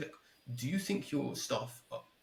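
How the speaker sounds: ordinary talk, nothing marked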